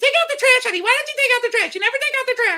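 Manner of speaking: very high, swooping, repetitive nagging tone. Husband making fun of his wife, imitating Joyce nagging. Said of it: "that's my nagging voice".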